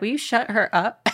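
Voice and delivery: ordinary talk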